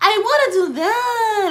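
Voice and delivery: very high, slow, drawn-out whimpering whine, near tears. Complaining about an actress's acting, imitating Amara La Negra's whiny talk. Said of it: "She talks like this".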